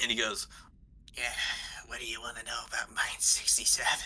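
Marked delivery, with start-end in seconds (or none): 1.2-3.9 spooky, eerie, unsettling character voice. A narrator voices a character answering after being handed four silver, creepy voice. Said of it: "Oh God. I'm so creeped out".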